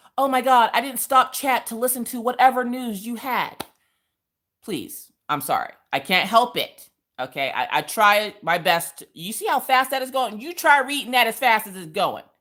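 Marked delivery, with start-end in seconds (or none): 0.2-3.7 mock aggrieved, offended, high, huffy grumble. Retelling how an upset viewer complains about being skipped: imitating an upset viewer complaining. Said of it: "somebody gets butthurt because".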